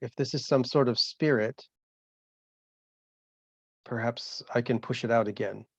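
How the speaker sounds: hushed half-whisper with no voice. Looking at Rose in total darkness, half-whispering. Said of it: "I I I whisper".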